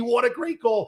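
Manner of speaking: mock shrill, very high, crazed, excited scream. Retelling watching the winning goal on TV: imitating own screaming. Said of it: "I was screaming at the T V".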